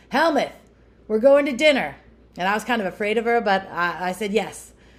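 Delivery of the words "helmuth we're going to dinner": put-on broad, thick New York accent, shouted, higher pitch. Speaker retells a woman yelling his name across a field, imitating thick new york yell. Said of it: "in her thick New York accent, she yelled across the field".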